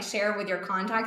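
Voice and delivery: ordinary talk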